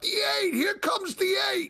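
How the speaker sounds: very high-pitched screaming. Retelling a guy at the races cheering on a horse: imitating someone screaming. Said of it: "he's screaming out".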